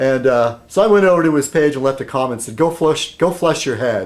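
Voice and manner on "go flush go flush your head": ordinary talk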